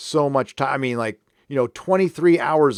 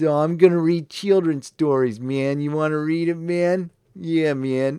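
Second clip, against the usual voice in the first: hippie stoner voice with repeated "man"; 3 semitones higher than usual. Speaker mocking how Michael Chabon talks now, Michael Chabon as a stoner. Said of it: "now he talks like a hate street stoner".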